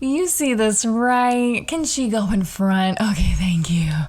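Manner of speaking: play-acted, tipsy, friendly, pleasant politeness. Retelling how the speaker's mother asked a woman in front, imitating her drunken, pleasant voice. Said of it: "her drunken, pleasant voice".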